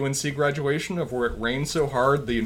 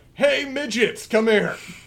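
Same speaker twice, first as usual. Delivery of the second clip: put-on big, slow, drawn-out booming bellow; 8 semitones higher, 4 dB louder than usual. Retelling how a prefect bellows at scared underclassmen: imitating a loud bellow. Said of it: "he bellows out loud".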